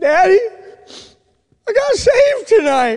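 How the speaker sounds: mock sobbing, very high-pitched, tearful crying voice. Retelling a young man's phone call to his father: imitating someone crying. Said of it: "And he starts crying".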